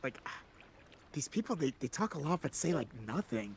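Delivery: hushed, confiding whisper. Retelling walking up to Dion to comment on the people, retelling a whisper. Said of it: "I'm whispering to Z- like Dion".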